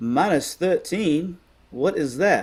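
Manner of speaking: put-on high, old Southern lady voice. Retelling the speaker's grandmother asking about a score, imitating grandmother's Southern voice. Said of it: "in her best Southern voice of all time".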